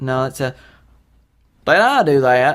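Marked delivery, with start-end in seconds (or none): 1.6-2.6 awful, clumsy, slow put-on character voice. Trying the catchphrase a third time: bad Steve Urkel impression. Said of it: "That sounds fucking awful".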